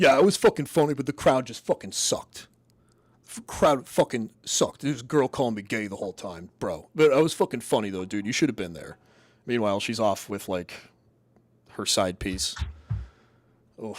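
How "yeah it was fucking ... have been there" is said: mock bragging, boastful tone. Retelling what the guy told the girl after his show: imitating a guy bragging. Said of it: "was just like".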